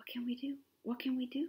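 whispering. Fish at the bottom of the sea swim around the broken moon, whispering. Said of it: "they whispered".

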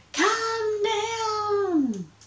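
very high, loud cry, pitch stretching down. Ring-tailed Monster calls up to the pink pajama bird in its tree, crying out loudly. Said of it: "she cried".

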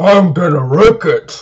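very loud, smashing yell belted at full volume. Urging viewers to smash the like button: Wreck-It Ralph voice. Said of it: "Just be like Wreck-It Ralph and go".

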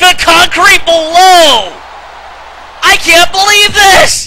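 loud, high, hyped play-by-play commentator voice. Commentating a wrestling match as a finisher lands, in an excited commentator voice. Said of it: "My excited voice!".

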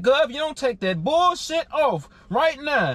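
ordinary talk, nothing marked

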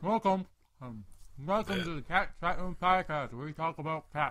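talking with mouth full. Host opening the Cat Chat Room Podcast while eating, talking with mouth full. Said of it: "My mouth is full".

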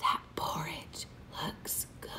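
hushed, barely voiced, breathy whisper. Leading listeners to whisper a line together: whispering as Goldie Clucks. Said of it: "That's a whisper voice".

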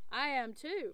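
ordinary delivery

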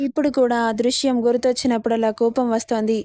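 ordinary delivery

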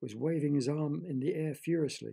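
ordinary delivery, nothing marked

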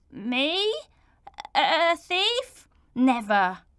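very slow, stumbling, halting stammer. Accused of stealing sweeties by a child, the accused boy answers, stammered. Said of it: "Bert stammered".

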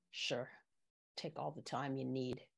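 low, soft, expressionless deadpan delivery. Narrator reads the woman answering the narrator's request for time to think: deadpan. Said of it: "She deadpans".

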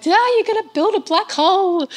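loud, high, freaked-out, panicked outcry. Retelling how the public reacted to the collider news: imitating the public freaking out. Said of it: "the public freaking out, being like".

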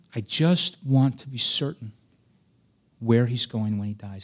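put-on tearful, crying delivery. Speaker retells a man's words on the phone, retelling tearful words. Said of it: "he's saying this in tears".

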